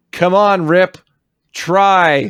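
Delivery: whiny shout, high, very slow, "try" drawn out. Quoting Randy shouting his strategy at Rip: Randy, shouting with emphasis. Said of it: "I put much more energy into my performance".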